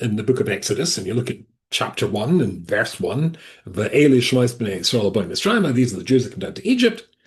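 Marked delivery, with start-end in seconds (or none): none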